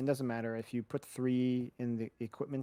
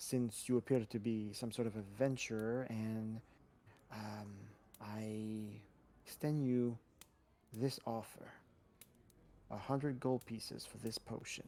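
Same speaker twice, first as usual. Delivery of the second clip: breathy, hushed half-whisper, drawn-out "I"; 5 dB quieter than usual. Retelling what he said to an adventurer, half-whispering. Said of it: "he whispers and he says".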